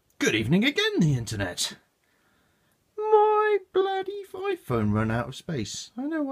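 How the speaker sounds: very high, swooping, drawn-out sing-song voice. Host restarting an unboxing video after the phone ran out of space; voice going really high. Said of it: "why my voice got really high there".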